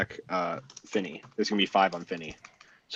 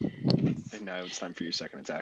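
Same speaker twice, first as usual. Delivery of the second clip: ordinary talk, nothing marked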